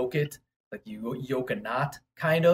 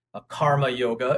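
karma yoga said in an American accent. Explaining the types of yoga, saying one name in an American accent. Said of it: "as we would say in an American accent".

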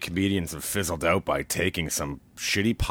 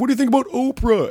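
very high heckling yell; 6 dB louder than usual. Retelling a fan heckling the performer from the crowd: imitating a heckler yelling. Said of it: "someone like yelled out like".

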